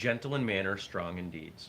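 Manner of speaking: ordinary talk, nothing marked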